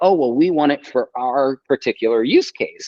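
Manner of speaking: sneering, mocking put-on voice dripping with mockery. Quoting what the financial backers say: mockingly imitating them. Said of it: "I say that voice mockingly".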